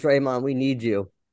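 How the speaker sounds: mock crying, pleading tone. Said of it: "called him up from a parking lot crying".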